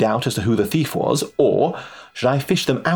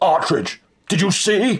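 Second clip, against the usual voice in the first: raised, pitched-up shout, calling out; 8 semitones higher than usual. A man in the waiting group shouts to the narrator bursting in from backstage, shouted. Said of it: "shouted Rawlins".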